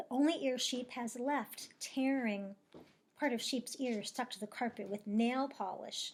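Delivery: plain reading voice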